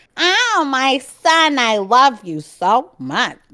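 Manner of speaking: put-on New Jersey accent.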